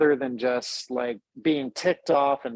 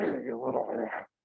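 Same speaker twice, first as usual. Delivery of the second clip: mumbling under breath, quieter; 7 dB quieter than usual. Acting out a reaction to a difficult person: muttering under breath. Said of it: "under my breath".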